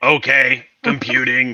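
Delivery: in a low voice. During a game scene, a character answers a machine's prompt in a low voice. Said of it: "He says in a low voice".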